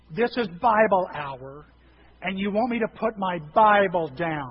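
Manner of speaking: calling out loudly. Retelling how a man reading his Bible answered being told to listen; retelling a raised voice. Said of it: "he raises his voice".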